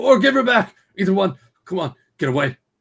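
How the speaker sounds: shrill, very high-pitched shouting. Voicing a man behind a door after a shotgun fires: yelling. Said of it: "He yells out".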